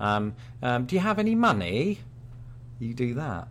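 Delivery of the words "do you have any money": put-on rising intonation. Teasing a conversation partner about how they ask questions, imitating rising question intonation. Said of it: "ask a question in a very British way".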